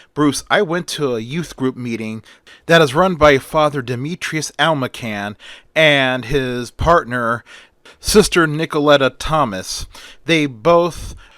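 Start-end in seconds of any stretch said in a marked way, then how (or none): none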